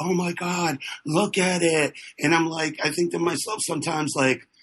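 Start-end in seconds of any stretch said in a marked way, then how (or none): 0.0-1.9 put-on gushing, slow, out-of-breath reverence. Mocking people who gush over art: imitating breathless art lovers. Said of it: "they get out of breath about it".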